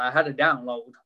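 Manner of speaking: put-on broad American accent. Mocking preachers who claim a word from god, in a broad american accent. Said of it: "in a very broad American accent".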